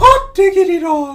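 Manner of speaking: high-pitched cartoon voice. Speaker shows off their Mickey Mouse voice, as high as it goes: very high Mickey Mouse voice. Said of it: "I can do a Mickey Mouse voice. That's as high as it goes".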